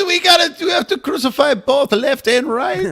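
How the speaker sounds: put-on speaking with an Israeli accent. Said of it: "Jesus now has an Israeli accent".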